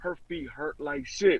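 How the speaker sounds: hushed whispering. Speaker retelling what he whispered to the others while walking out, retelling a whisper. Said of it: "So I'm sitting there whispering to them like".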